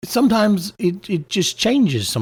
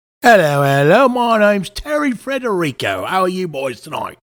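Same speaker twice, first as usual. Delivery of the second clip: put-on British accent; 3 semitones higher than usual. Greeting the hosts as a guest on the show: put-on british accent. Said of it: "having a British accent when I'm not from that place".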